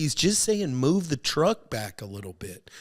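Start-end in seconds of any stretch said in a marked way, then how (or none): none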